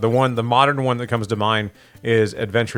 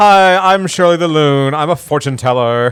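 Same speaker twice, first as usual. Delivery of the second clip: put-on very loud, high, slow, drawn-out Valley Girl voice; 5 semitones higher, 8 dB louder than usual. Imitating a game character introducing herself: Shirley the Loon voice. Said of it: "it's a very Valley Girl kinda, yeah, voice".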